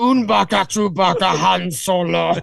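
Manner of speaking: very slow, dragged-out, creaky alien drawl. Showing off an old favorite impression: Jabba the Hutt impression. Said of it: "that was my favorite impression. You just like scrunch my chin ups".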